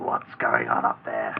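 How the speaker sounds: very deep, rough, rasping voice. Game master voicing someone calling up from down below, rasping voice. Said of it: "you can hear a rasping voice from down below".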